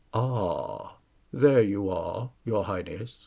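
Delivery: deep bass voice, speaking low in the bass. Reading a story, a strange man greets Jaden as his highness: monotone bass voice. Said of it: "he said in a monotone bass voice".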